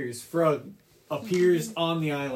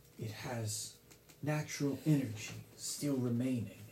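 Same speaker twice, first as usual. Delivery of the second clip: soft, weakened, spent serpent spirit voice; 3 semitones lower, 9 dB quieter than usual. The water serpent around the player's neck speaks to them, in Aetherflow's water serpent voice. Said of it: "As the water serpent around your neck looks towards you and says, ... I am [name]. I am a protector of this land. But I've been weakened until now".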